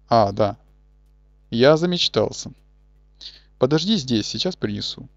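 ordinary delivery

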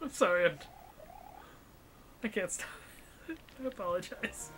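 giggling and laughing through the words. Apologizing to another player while unable to stop, laughing while talking. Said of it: "Laugh it up".

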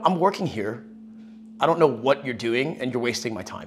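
acted-out mock deadpan, bone-dry and unbothered. Retelling how Ben answered his sister's call, imitating Ben's deadpan. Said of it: "so deadpan".

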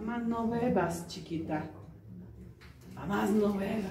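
tender, soft pleading.

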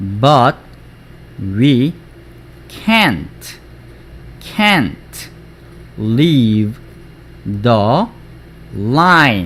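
very slow delivery, word by word.

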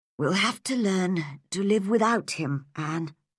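plain reading voice

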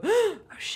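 high, panicked yelp. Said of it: "you go into panic mode and you go".

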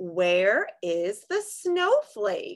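question-like rising tune, climbing up on snowflake. Reading a picture book aloud, the speaker demonstrates rising question intonation. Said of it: "my voice is gonna ask a question".

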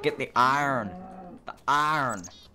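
weak attempt at American accent. Imitating how Americans would say a line, imitated American accent. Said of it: "I'm not particularly good with the American accent".

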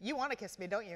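ordinary delivery

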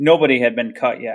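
ordinary delivery, nothing marked

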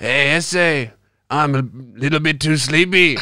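slightly Scottish put-on accent. Telling the other podcast host how you'll call in sick, in a bit-scottish accent. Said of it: "That sounded a bit Scottish".

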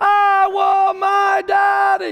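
put-on high, screaming small child's cry. Retelling a little girl crying for her father as waves grew bigger; retelling a child's scream. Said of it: "the louder her voice got".

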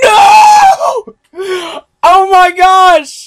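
very high-pitched, very slow, drawn-out scream. Playing Call of Duty Zombies for viewers: scream. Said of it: "Sorry for the scream".

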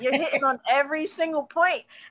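mock, high, excited cheering yell. Retelling cheering at the computer as a listener: imitating own screaming. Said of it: "I was over here screaming at the computer saying".

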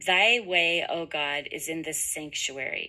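ordinary talk

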